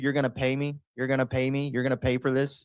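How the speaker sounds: half-hearted, mild fake scream. Acting out a reaction to the crash: put-on screaming. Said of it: "I'd be screaming, too".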